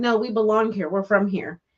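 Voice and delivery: normal talking voice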